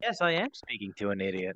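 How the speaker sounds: condescending, patronizing, talking-down tone. Imitating another player's tone of voice: imitating a condescending tone. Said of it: "just the tone of voice that's like".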